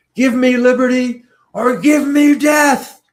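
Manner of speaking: very high, loud, drawn-out screamed declamation. Retelling a student playing Patrick Henry in class: imitating a student screaming. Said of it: "she's now screaming".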